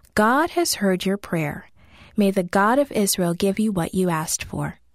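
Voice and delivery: ordinary delivery, nothing marked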